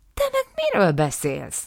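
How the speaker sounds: indignant, affronted, swooping tone. Áftáb protests during an argument with Nisszim, indignant. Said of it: "méltatlankodott Áftáb".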